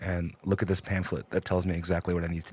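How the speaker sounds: put-on whisper. Acting out someone reading from a pamphlet, in a put-on whisper. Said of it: "I'm whispering".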